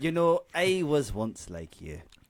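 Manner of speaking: put-on Scottish accent. Reading a book blurb aloud with a co-reader, in a scottish accent. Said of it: "Take it away, you Scotsman".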